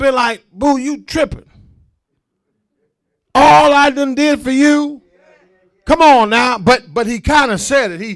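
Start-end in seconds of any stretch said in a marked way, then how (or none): 0.5-5.0 loud, heated, scolding cursing-out. Imitating Job as he could have cursed out his wife: imitating someone cursing out. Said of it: "he could have cursed out".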